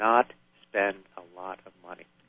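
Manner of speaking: heavy emphasis on the word not. Advising inventors about spending money, with stress on not. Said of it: "I want to emphasize the word not".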